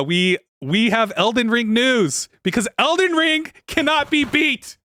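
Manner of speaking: drawn-out, slow, very high rising yell. Speaker moving on to the next news item on the mic, yelling. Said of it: "I'm yelling into the mic".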